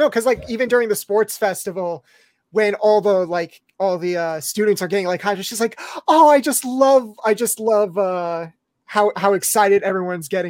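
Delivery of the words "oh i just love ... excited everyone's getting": adoring, indulgent, doting, fond gushing. Imitating Midnight watching excited students at the sports festival: doting Midnight voice. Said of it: "It's like a dotting kind of way".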